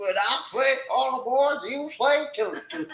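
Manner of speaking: mock country accent, high and stretched-out.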